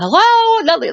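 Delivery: put-on, very high shouted yell. Retelling a horror film scene, imitating someone yelling. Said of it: "Brenda's yelling".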